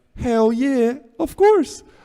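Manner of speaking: very high-pitched, eager squeal. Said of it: "I'm like".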